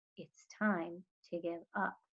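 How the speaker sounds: very soft, hushed voice. The preacher speaks to Opal, who refuses to stop looking, in a real soft voice. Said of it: "the preacher said in a real soft voice".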